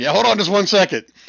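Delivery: laughing through the words at very high pitch. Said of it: "the other bartender starts laughing".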